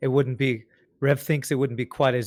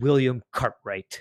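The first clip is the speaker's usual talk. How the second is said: put-on ominous, menacing, threatening tone. Imitating someone reading names from a list: mock-threatening voice. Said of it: "like he's in a threatening voice".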